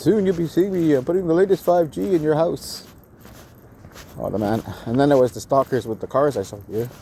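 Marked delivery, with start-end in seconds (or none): 0.0-2.9 heavily exaggerated put-on English accent. Retelling what a caller from England said on the phone, in a big English accent. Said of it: "some guy with a big English accent".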